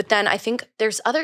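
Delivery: ordinary talk, nothing marked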